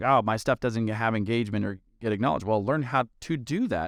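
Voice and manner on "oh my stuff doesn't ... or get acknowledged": ordinary delivery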